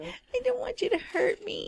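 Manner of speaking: whiniest possible whining, complaining voice. Speaker talks to a crabby cat, putting on a whiny voice. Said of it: "the most whiny ass voice I could have possibly made".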